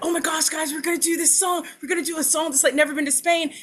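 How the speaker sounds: very high, eager, rushed, rattled-off, excited gushing. Speaker imitates him giving the group a rundown: Steve voice, mock-excited. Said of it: "He just gets excited about like everything".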